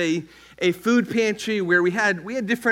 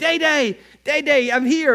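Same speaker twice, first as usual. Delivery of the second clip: imitated yelling, pitched higher; 6 semitones higher, 3 dB louder than usual. Retelling how Yulip called out before reaching the door: imitating Yulip yelling. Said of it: "he would start yelling out".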